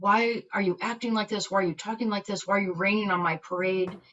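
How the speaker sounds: put-on frustrated, angry, exasperated scolding. Retelling own words to a husband on a bad day: imitating own angry words. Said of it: "I am angry".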